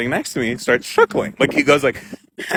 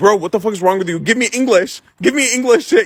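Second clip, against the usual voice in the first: put-on exasperated, frustrated shouting, pitched up; 8 semitones higher than usual. Retelling the moment, the speaker quotes what he yelled at the man next to him. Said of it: "I'm yelling at him".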